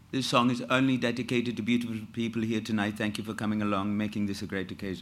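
Gujarati Indian accent. Retelling how he would talk, in a Gujarati Indian accent. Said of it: "you had a Gujarati accent, and that was has an Indian sound to it. And he would, you know, be".

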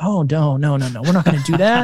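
imitated quiet mutter under breath. Retelling own reaction to riding the mall animals: imitating a mutter under breath. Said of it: "And under my breath".

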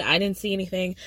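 ordinary talk

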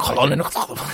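put-on guttural, spitting German accent. Telling the history of the Cape Colony, a speaker slips into a guttural mock German accent. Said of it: "απλά πρέπει να προσθέσουμε λίγο φτύσιμο".

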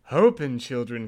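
put-on Italian accent. Reading a fairy tale aloud, voicing the wolf at the door in an Italian accent. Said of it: "That was my Italian".

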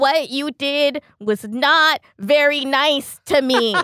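thickly put-on, very slow drawl, every word dragged out. Retelling a movie scene, character with tissue in nose: Adam Sandler-y voice. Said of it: "in this deeply Adam Sandler-y, like, evoca-, like, tone of voice".

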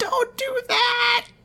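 put-on high, slow crying-out voice of a small girl.

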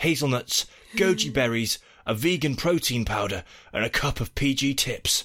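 ordinary delivery

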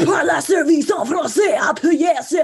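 very high, very loud automated French phone-menu voice. Describing a phone menu's recorded prompts, imitating a French phone menu voice. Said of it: "I find it terrifying".

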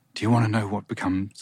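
very suggestive, as suggestive as possible. Quoting a teenage model's line from a jeans advert, imitating Brooke Shields' suggestive delivery. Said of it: "very suggestively, and I'll try to do it exactly as she said it".

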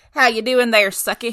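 breathless southern voice. Describing how Bill the vampire always greeted Suki, in Bill the vampire's southern voice. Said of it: "he was so southern".

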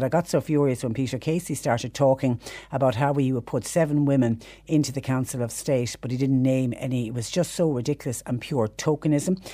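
normal talking voice

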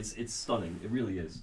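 on the verge of tears. Talking about a game scene after stopping for a tissue: teary, choked up. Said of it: "I teared up playing this".

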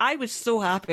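ordinary delivery

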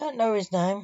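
ordinary delivery

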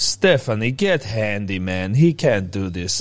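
put-on Croatian accent, words drawn out. Retelling what the mother-in-law said about the curtain: imitating a Croatian accent. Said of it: "that's why I did the accent".

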